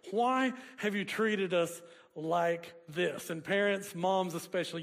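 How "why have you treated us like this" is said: ordinary delivery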